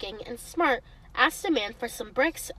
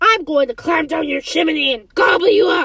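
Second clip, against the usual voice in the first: very loud, ferocious, furious roaring bellow; 4 semitones higher, 11 dB louder than usual. Narrator voicing the furious wolf speaking to the third little pig, roaring. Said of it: "he roared".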